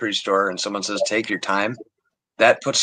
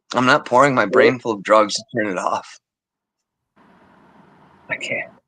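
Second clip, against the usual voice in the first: tearful, crying while talking. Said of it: "I'm crying".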